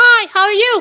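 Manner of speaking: very high put-on cartoon child voice. Demonstrating a voice technique, the speaker greets someone in a cartoon kid voice. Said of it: "like a cartoon kid voice".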